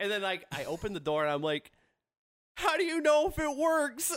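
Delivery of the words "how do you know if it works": mock, very high-pitched laughing and sobbing together. Retelling what he said as he opened the door, acting out cracking up and crying. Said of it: "cracking up and crying all at the same time".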